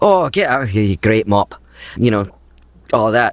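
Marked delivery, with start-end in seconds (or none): 0.0-1.5 Scottish character accent. Voice actor recalling his Dota: Dragon's Blood role, Maddox's Scottish accent. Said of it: "I've used a Scots dialect quite a bit more".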